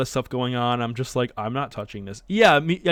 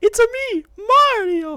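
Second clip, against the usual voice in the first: exaggerated Italian accent, very high and loud; 5 dB louder than usual. Streamer thanking a guest for coming on, in a Mario voice. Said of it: "it's your Mario voice".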